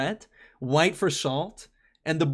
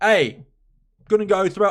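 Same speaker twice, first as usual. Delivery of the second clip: put-on mock Australian accent; 2 semitones higher, 5 dB louder than usual. Chatting about a Utah holiday, suddenly slipping into an Australian accent. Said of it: "went into an Australian accent just there".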